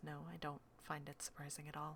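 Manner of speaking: tiny, very small, very hushed quiet voice. Narrating a scene, voicing Cass's reply, in a very small voice. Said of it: "in a very, like, small voice".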